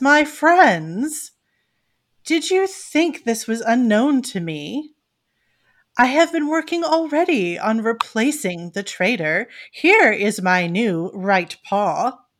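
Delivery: grand, lordly, noble cat voice. Game master speaking as a cat lord to his friends, Lord Sassafras voice. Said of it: "Lord Sassafras looks down at him approvingly and looks back up and says".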